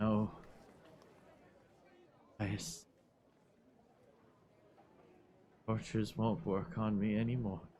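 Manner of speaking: faint, barely audible mumble under the breath. A game master voices a dying man being tortured, barely audible. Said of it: "I can't hear him".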